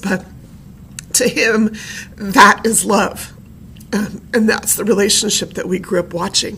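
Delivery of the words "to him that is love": slow, choked-up voice catching in throat. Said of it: "I'm getting really choked up about this".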